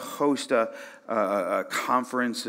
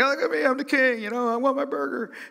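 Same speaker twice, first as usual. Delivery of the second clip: play-acted very high, squeaky, obnoxious show-off jerk voice; 4 dB louder than usual. Retelling grabbing a crown while out with friends, imitating acting like a jerk. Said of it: "I'm being like a jerk".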